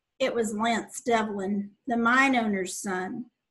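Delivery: plain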